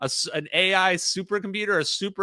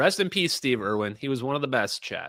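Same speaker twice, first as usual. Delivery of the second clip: ordinary talk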